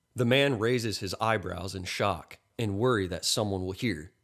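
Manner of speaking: plain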